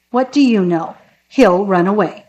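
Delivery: ordinary delivery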